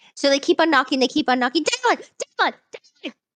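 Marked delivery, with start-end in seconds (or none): 1.6-3.1 very high-pitched, repeated shrieking screams. A character keeps knocking on a door and calling out, screaming. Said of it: "why the screaming?".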